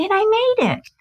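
put-on very high, little girl child voice. Showing how one's voice sounds when selling one's own work: little girl voice. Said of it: "your little girl voice or your little child voice comes right out going".

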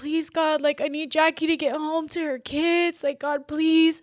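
put-on tearful, crying, pleading voice. Speaker retells what she prayed back then, retelling crying while praying. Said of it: "I was legit crying".

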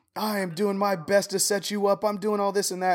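put-on very high, shrill, loud yelling. Retelling how a manager yelled in a one-on-one: imitating manager yelling. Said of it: "She's yelling at me".

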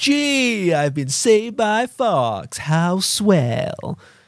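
play-acted condescending drawl, very slow, drawn-out "gee". Quoting a game character's line after saved: condescending Falco voice. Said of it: "the line he says is so fucking condescending".

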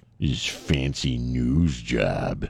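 put-on snooty voice, low, slow, drawn out.

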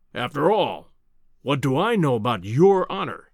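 ordinary delivery

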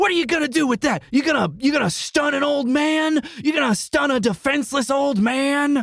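very high, shrill, angry shouting. Voicing an old man shouting at a police officer: shouting angrily. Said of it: "Lamortimer starts shouting".

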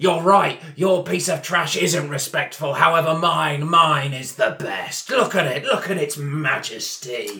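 belligerent, loud, furious, boastful voice. At a funeral in a role-playing game, a stone-carving roadie answers a rival: furious belligerent roadie voice.

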